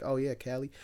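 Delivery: casual, put-on American accent. Retelling answering a shop assistant in a put-on US accent. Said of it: "speaking in, like, a, a U S accent".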